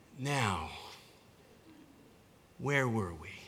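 deep, low western-hero movie cowboy voice. Retelling a childhood daydream of Jesus landing on the ground: Clint Eastwood voice. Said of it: "in a voice very much like Clint Eastwood's".

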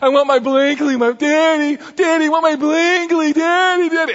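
mock escalating whiny crying, very high pitched. A father retells his daughter crying in the car, imitating Savannah's escalating crying. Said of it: "it starts to elevate".

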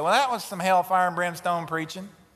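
mocking, dry, sarcastic tone. Preacher quotes somebody's remark about his preaching: mock-sarcastic retelling. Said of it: "somebody sarcastically said".

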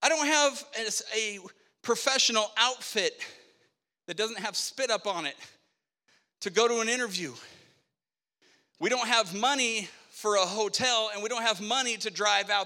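mock crying, talking through tears. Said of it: "why are you crying?".

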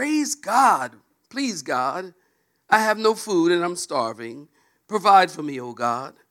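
put-on, loud shouted crying out. Telling a joke, voicing the old lady begging for food: acting out a shout. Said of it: "she shouted".

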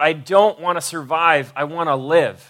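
ordinary delivery

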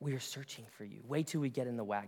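very quiet, low, close-up half-whisper. Acting out mothers bending down close to someone: imitating a mother's half-whisper. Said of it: "would bend down and get right in their face and whisper".

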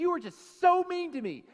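mock furious, shrill, full-volume, loud angry tone. Retelling a sermon story of a wife woken up angry: imitating someone mad. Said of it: "really mad at him".

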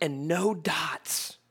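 ordinary delivery

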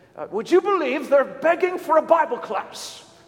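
put-on English accent. Retelling what Peter said when he walked into the office, in his English accent. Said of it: "in his English accent".

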